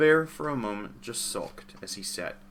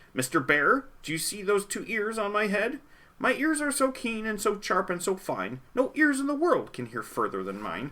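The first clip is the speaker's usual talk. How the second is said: very high, boastful little rabbit voice; 11 semitones higher than usual. Narrator reads the rabbit bragging to the bear: rabbit boasting out loud. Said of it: "The rabbit felt mighty important that day, on top of the hill in the sun where he lay. He felt so important up there on that hill that he started in bragging, as animals will. And he boasted out loud".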